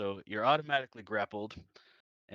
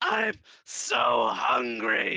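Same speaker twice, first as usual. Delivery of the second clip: very high, rough, shrieking monster scream; 14 semitones higher, 6 dB louder than usual. Narrating a monster gnashing its teeth in your face, monster screaming. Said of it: "it's just screaming in your face".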